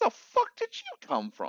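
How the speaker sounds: very high, loud yelp, voice cracking mid-line. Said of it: "Why why did my voice crack?".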